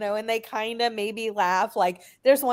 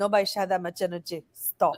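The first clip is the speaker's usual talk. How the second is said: mock flat deadpan delivery; 2 semitones lower than usual. Imitating a coworker telling the speaker to stop: imitating someone deadpan. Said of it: "he's just so deadpan".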